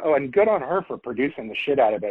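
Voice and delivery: ordinary talk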